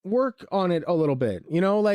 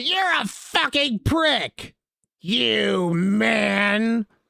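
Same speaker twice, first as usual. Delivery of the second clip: very slow, seething, furious delivery with "man" drawn out; 3 semitones higher than usual. Acting out an imagined partner snapping at the table: mock furious outburst. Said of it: "just snap and then just stand up and smash the table".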